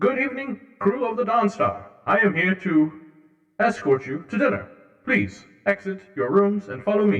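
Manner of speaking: high, loud, formal robot voice. Voicing a protocol droid escorting the crew to dinner: protocol droid voice. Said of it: "H G protocol droid unit's, uh, voice".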